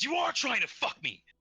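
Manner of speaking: acted-out scream. Retelling a story, voicing a character's outburst at a man: retelling a scream. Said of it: "she just screams".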